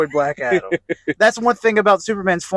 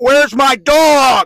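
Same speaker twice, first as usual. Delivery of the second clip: loud, furious yell with dog drawn out; 7 semitones higher, 7 dB louder than usual. Retelling a movie scene where Superman busts through a door: imitating an angry Superman. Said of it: "seeing Superman so fucking angry".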